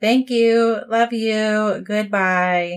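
grating, put-on obnoxious voice.

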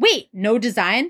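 play-acted affronted, taken-aback, offended, disbelieving tone. Retelling what she asked when a design was refused: imitating someone offended. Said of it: "so fucking offended".

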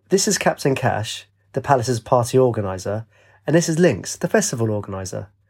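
ordinary delivery

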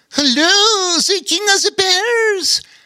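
very high-pitched character voice. A second voice from the balloon greets the King of the Bears, higher-pitched. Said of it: "said a second, higher-pitched voice".

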